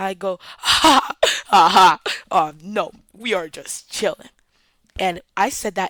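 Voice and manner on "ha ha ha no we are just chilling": very fake voice, loud fake laugh then fake calm. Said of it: "in the fakest voice I've ever heard in my life".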